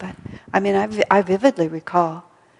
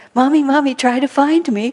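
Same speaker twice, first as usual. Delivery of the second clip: put-on child's voice, higher and louder; 7 semitones higher, 6 dB louder than usual. Imitating a child hiding under couch cushions: imitating a child playing hide and seek. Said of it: "And they'll say".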